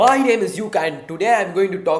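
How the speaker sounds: shrill, very high, full-volume shout. Explaining fear of speaking in front of a class, the speaker demonstrates a loud voice. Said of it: "talk in a loud voice".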